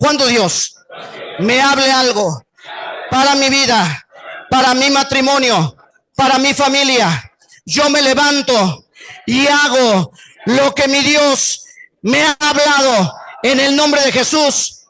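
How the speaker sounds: strong, manly grown man's voice. Leading the standing men and boys in repeating a declaration, loud strong man's voice. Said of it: "así con voz de varón, de hombre fuerte".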